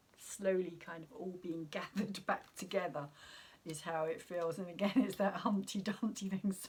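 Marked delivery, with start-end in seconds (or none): 4.6-6.6 words broken up by laughter. Speaker breaks into laughter at their own comparison, laughing while talking. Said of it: "sorry, that's why I'm laughing".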